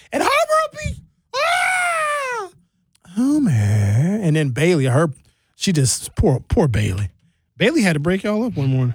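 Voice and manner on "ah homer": very high-pitched shriek. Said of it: "When Homer's voice gets in the upper register".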